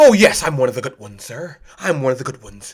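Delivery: deep, quiet, hushed, deferential and polite voice. Speaker acts out rehearsing how to talk in an interview: rehearsed interview voice. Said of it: "Rehearsing your interview voice".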